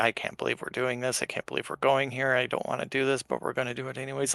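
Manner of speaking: mumbling under breath. Player's character grumbling while shuffling forward, mumbling under breath. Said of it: "Like I'm like mumbling under my breath".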